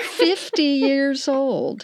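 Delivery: slow mocking emphasis.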